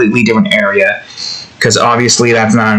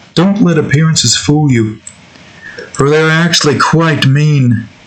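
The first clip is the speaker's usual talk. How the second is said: high, pitched-up, botched cartoon alien voice; 5 semitones higher than usual. Quoting a cartoon line, Mooninites leader impression. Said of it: "I'm trying to replicate the Mooninites leader guy".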